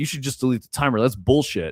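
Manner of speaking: heated, aggressive griping rant. Quoting a man who complained about your game's difficulty, retelling an aggressive rant. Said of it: "I let him like rant for a little bit".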